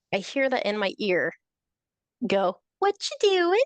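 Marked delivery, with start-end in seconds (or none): 2.7-3.6 put-on very high little-girl voice. Retelling a voice suddenly heard in their ear, in a cutesy little girl voice. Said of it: "the cutesy little, like stereotypical little girl voice".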